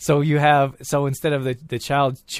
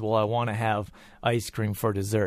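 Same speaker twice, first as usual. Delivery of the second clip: plain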